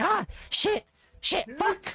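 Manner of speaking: very high-pitched, long drawn-out cursing. Voicing Vigil tripping up the stairs: Vigil cursing as he falls. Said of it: "He's like".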